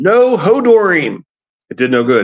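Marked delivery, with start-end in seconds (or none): 0.0-1.2 very high, shrill shout. During a thunderstorm, shouting back at a companion stumbling through the dark. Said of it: "Bran shouted back".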